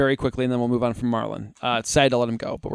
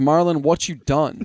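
play-acted, passionate, disappointed, heartfelt outcry; 2 semitones higher than usual. Retelling how a disappointed moviegoer cried out mid-film: mock-passionate outburst.

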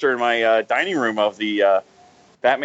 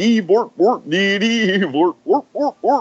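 mock Swedish-sounding gibberish, much higher pitch; 7 semitones higher than usual. Trying out another voice, doing Swedish Chef gibberish. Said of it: "A little Swedish chef".

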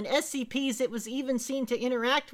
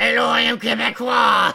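dark evil put-on demonic voice, much louder; 9 dB louder than usual. Speaker demonstrates how the described thing's voice changes, in a dark evil demonic voice. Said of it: "dark, evil, demonic voice".

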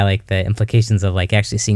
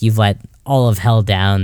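usual speaking voice

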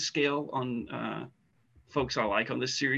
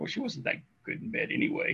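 quiet, breathy whispered mutter under the breath; 9 semitones higher, 5 dB quieter than usual. Retelling what a character mutters off in the back, retold mutter under his breath. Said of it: "he's just under his breath".

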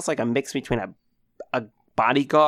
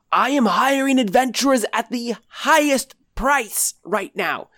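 wild, very high yell at the top of the lungs; 11 semitones higher, 4 dB louder than usual. Anders comes running into the bar, hiring adventurers: yelling at the top of his lungs. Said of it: "yell at the top of his lungs".

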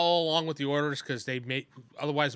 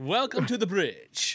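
put-on suave host voice, higher pitched; 6 semitones higher than usual. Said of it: "He looks like Ricardo Montalban".

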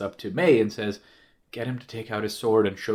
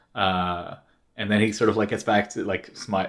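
ordinary talk

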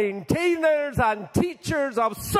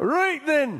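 put-on Scottish accent; 3 semitones higher than usual. Starting a reading the speaker said must be in a Scottish accent. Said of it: "it has to be read in a Scottish accent".

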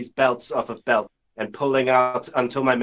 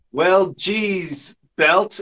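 loud, pitched-up calling out; 7 semitones higher, 4 dB louder than usual. Calling out from the desk to a character: loud, calling out. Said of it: "really loudly, I say from the desk".

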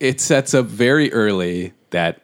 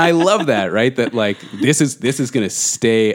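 plain

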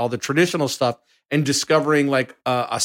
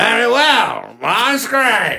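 very slow, drawn-out, swooping starship-captain voice; 9 semitones higher, 4 dB louder than usual. Doing an impression of every scene with Janeway: Janeway impression. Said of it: "Let me do my impression of every scene with Janeway".

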